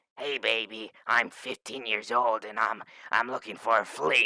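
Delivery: very loud, blaring smoker-style voice. The speaker demonstrates a flirty line in the Smoking Pam voice. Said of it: "Smoking Pam voice".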